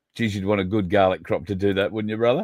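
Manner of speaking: plain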